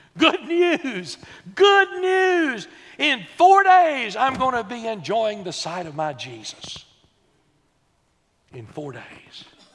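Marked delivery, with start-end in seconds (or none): 0.2-4.9 very loud, booming, swooping shout. Retelling how a man shouts to a dear friend at the crowd's edge; retelling a shout. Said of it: "he shouts to him".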